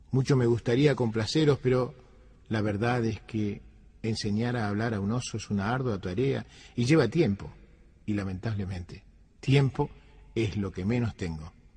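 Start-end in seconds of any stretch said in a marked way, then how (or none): none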